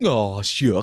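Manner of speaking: loud, silly goofball voice. Describing oneself as goofy, then showing it: goofy voice. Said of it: "like that was the goofy voice".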